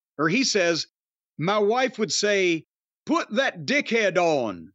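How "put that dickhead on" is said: put-on Bradford accent. Quoting what a man's wife would say, in a Bradford accent. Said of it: "I did the accent because they're from Bradford".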